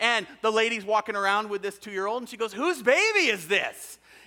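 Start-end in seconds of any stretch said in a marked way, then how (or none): 2.5-4.0 put-on, slow, drawn-out yell. Retelling a story of a woman down the beach: imitating a woman yelling. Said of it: "this woman yells out these words".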